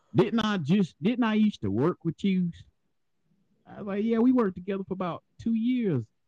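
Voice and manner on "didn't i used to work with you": put-on country girl voice, much higher. Retelling a country girl from the factory coming up to you: country girl voice. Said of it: "I'm gonna do the voice and everything".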